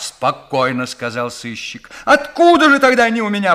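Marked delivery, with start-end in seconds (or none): 2.0-3.5 very high, scared, frightened yelling. The burglar keeps shouting at the detective, now in a frightened voice. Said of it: "продолжал кричать взломщик, теперь уже испуганным голосом".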